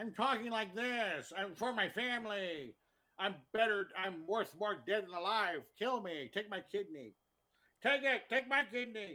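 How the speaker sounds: high, slow, pinched nasal put-on voice, stretched out. Imitating a film role, nasal put-on voice. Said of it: "Nick Cage puts on a voice".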